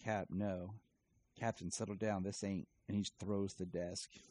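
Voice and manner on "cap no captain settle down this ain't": plain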